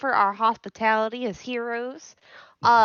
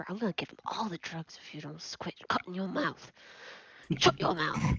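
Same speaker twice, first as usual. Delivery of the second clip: very quiet, soft, breathy whisper; 7 semitones lower, 12 dB quieter than usual. Whispering a threat to a party member during a trade: whispering. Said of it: "and I whisper".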